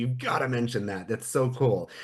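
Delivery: normal talking voice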